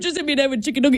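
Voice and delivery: put-on heavy British accent. Quoting a video where someone threw a nugget: heavy British accent. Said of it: "in his heavy Br-, British accent".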